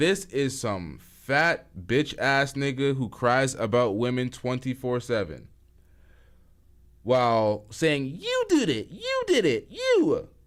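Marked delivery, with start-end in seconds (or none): 8.2-10.2 very high, swooping, sing-song voice. Mocking someone who is criticised in the talk: high-pitched voice imitating Anton Daniels. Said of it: "in his high-pitched, undeveloped bitch ass voice".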